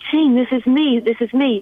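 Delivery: slowed shouting. Retelling a phone call, reenacting her own yelling to the caller. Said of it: "I'm yelling through the phone".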